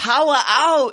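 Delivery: attempted Australian accent. Told by the other speaker to say it with an Australian accent: attempted Australian accent. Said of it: "You have to say it with Australian accent".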